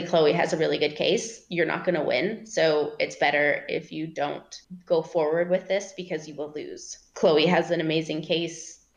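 usual speaking voice

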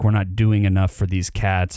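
ordinary talk, nothing marked

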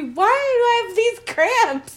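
high, slow, panicked whine.

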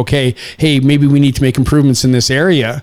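ordinary talk

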